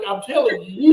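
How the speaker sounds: plain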